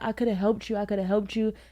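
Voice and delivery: tearful, crying, pleading tone. Retelling what the girlfriend said outside: imitating someone crying.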